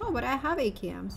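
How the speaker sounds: plain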